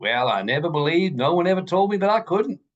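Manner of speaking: homespun hillbilly voice. Retelling a man's answer in an interview, in Raymond's hillbilly accent. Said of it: "He just said in his hillbilly accent".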